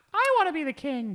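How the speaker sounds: put-on very high, squeaky young boy voice. Act out an eleven-year-old who wants to be king, imitating a boy's squeaky voice. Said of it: "his squeaky voice".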